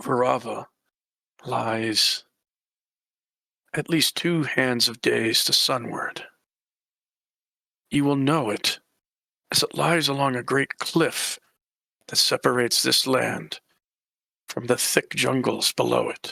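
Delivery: low voice with an even cadence. Narrating a game, voicing a woman who answers the players: speaking in a low voice. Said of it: "She's speaking in a low voice".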